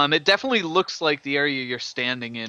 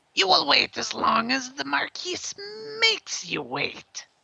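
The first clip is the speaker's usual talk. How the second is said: very high, different voice calling out; 14 semitones higher than usual. A storyteller describes a different voice calling out, in a slightly higher voice. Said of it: "maybe slightly higher".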